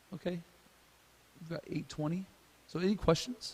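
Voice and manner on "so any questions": voice suddenly jumps way up, high-pitched. Speaker asking the audience for questions, voice suddenly high. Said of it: "my voice just went really high".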